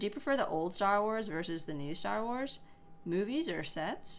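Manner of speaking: ordinary talk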